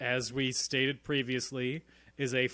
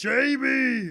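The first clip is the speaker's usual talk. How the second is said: put-on Austrian accent, higher and louder; 12 semitones higher, 9 dB louder than usual. Performing a line after being asked to do it with an accent: Arnold Schwarzenegger accent. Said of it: "Can you do it with an accent?".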